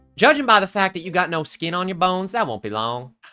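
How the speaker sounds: put-on Southern accent. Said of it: "Are you Southern now?".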